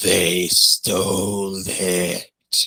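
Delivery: slow, sickly croak creeping out of the throat. Narrator voices a shadowy creature repeating itself, in a slow, sick croaking voice. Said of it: "a slow, sick voice creeps out of its throat as it croaks".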